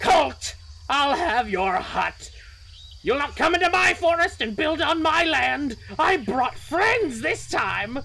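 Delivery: piercing shrill cry, very high. Narrating a story, a voice from outside threatens Colt, in a shrill voice. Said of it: "you hear this shrill voice from outside say".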